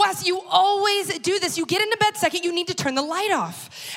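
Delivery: high-pitched, furious outburst, completely losing control. Speaker recounts confronting wes about leaving the light on, retelling an angry outburst. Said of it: "I lose my ever-loving mind".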